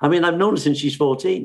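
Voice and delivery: ordinary talk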